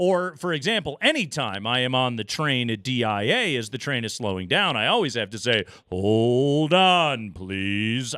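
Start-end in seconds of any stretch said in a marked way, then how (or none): 5.9-8.2 announcer-style voice, like over a PA. On the train as it slows down, saying hold on: Alan Roach announcer voice. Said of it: "I got to do the whole Alan Roach thing".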